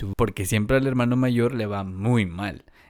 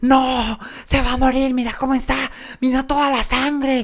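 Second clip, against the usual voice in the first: mock, very high-pitched, frantic, panicked shrieking screams; 13 semitones higher, 4 dB louder than usual. Retelling how the brother screamed in shock over the blood: imitating brother screaming in panic. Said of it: "él me gritaba".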